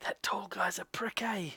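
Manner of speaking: high-pitched conspiratorial whisper. In a tabletop game, the narrator voices a dwarf talking to another character: whispering. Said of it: "she whispers to Milo and says".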